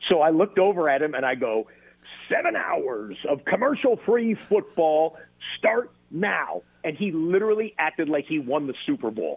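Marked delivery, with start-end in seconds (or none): 2.3-6.6 high-pitched on-air sportscaster catchphrase delivery. Retelling delivering his catchphrase to a fan in a parking lot: delivering his on-air catchphrase. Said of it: "this guy wants me to do the catchphrase".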